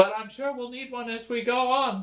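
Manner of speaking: high, eager servant-style voice.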